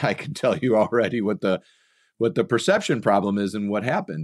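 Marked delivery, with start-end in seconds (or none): none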